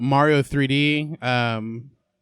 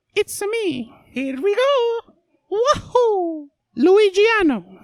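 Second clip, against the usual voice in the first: very high, drawn-out Italian voice, every word stretched; 4 dB louder than usual. Answering a request for a best Mario impersonation: Mario impression. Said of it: "Do your best Mario impersonation".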